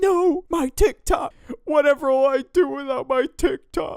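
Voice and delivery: high, loud mock wail, freaking-out girl voice.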